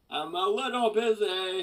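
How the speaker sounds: very loud, high-pitched yell. Player fighting a big red orc in a game, yelling. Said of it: "I yell".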